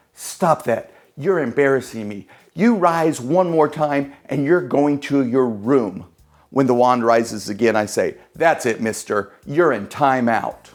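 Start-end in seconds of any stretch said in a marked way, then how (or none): 0.2-6.1 stage whisper, intensified and pushed harder. Magician scolding the wand as it starts moving, intensified stage whisper. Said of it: "I intensify my stage whispering".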